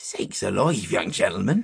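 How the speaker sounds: startled, sudden alarmed exclamation. Narrating a story, voicing the shepherd answering a young gentleman, startled voice. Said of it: "said the shepherd in a startled voice".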